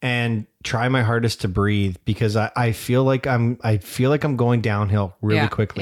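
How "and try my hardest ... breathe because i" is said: ordinary delivery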